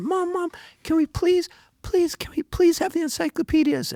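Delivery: very high, stuttering, begging tone. Retelling begging mom for the encyclopedias: imitating own stuttering plea. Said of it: "and I stuttered".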